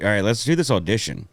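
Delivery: normal talking voice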